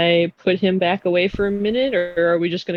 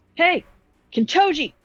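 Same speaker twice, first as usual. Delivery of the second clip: shrill, very high-pitched, loud shout; 10 semitones higher than usual. Playing a character who walks up to a shut door, yelling. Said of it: "Rose just walks up and just starts yelling".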